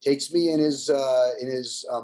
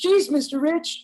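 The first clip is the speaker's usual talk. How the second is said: put-on very high, starstruck nine-year-old child voice; 13 semitones higher than usual. Recalling meeting a drummer he admired at age nine, in his nine-year-old voice. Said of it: "in my nine year old voice".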